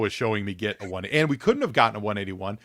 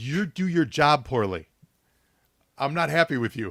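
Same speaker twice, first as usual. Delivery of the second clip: furious, angry telling-off outburst; 4 semitones higher than usual. Retelling what was said out loud to the producers: retelling his furious words. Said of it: "I'm furious about it".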